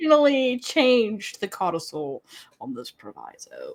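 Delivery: smug, superior know-it-all voice, swooping pitch. Speaker doing another figure's voice for the group, smug know-it-all character voice. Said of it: "I was doing his voice".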